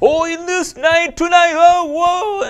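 very high-pitched, loud yelling into the mic. Showing how some people shout into the mic: imitating someone shouting. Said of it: "some people shout into the mic".

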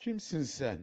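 quavering, unsteady, trembling and shaky voice. The narrator backs away from a stranger who resembles their father, trembling voice. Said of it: "dedim titrek bir sesle".

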